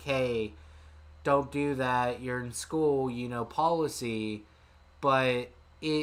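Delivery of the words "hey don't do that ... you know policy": usual speaking voice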